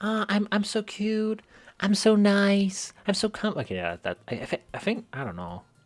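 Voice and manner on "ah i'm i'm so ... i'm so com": put-on cute girl voice, high and very slow. Trying out a voice for the cute girl character: trying a cute girl voice. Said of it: "Could I make, like, this, like".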